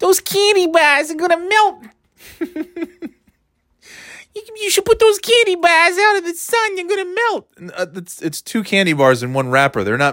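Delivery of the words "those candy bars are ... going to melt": put-on trashy New Hampshire accent, very high. Comparing New England accents, the speaker demonstrates a trashy New Hampshire accent. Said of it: "the New Hampshire accent's a little more, it's a little more trashy".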